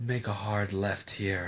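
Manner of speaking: silky, very low, soft, deep, slow murmur. Showing how the phone GPS really gives directions: silky smooth voice giving directions. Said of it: "It's like".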